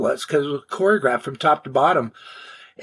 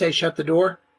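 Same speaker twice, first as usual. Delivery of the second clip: plain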